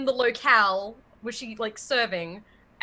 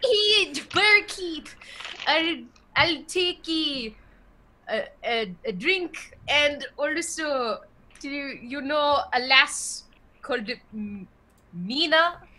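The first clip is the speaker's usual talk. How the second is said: clumsy, high put-on Irish brogue, stumbling; 5 semitones higher than usual. In a role-play game, a character speaks to the barkeep, in a bad Irish accent. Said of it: "My Irish accent is really bad".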